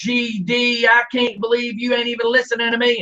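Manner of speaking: put-on high-pitched screaming mother voice. Telling a caller what a mother is screaming at her teenage son, imitating a screaming mother. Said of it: "a mama screaming at her sixteen-year-old son".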